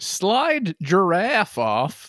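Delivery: line in a put-on American accent. Restating a confusing phrase so it makes more sense, in American accent. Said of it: "If I said it in an American accent, it would make more sense".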